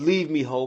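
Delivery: ordinary delivery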